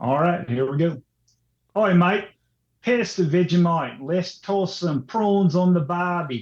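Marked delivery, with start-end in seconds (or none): 1.8-6.4 English speaker's put-on Australian accent. Taking turns trying an accent, first try in a put-on Australian accent. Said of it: "It sounded like an Englishman doing an Australian accent".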